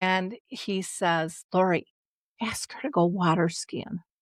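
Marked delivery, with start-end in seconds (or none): 1.5-4.0 put-on whispered voice. Retelling what dad's voice said in the ear: imitating dad whispering. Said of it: "I can hear his voice whisper in my ear".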